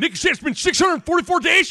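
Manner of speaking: loud broadcaster call.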